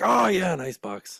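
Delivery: very loud, very high, drawn-out call. Retelling a ride where dad answered the guide: imitating dad saying it very loudly. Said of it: "It was, like, very loudly".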